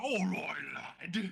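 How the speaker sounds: worn, rough-edged, creaky character voice. Voicing Kodlak getting back up after being thrown: voicing Kodlak. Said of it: "he's like".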